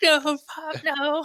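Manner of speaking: very high, shrill, frantic screaming shriek. Retelling how everyone in the car begged Pop: imitating people screaming. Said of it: "everybody in the car is screaming".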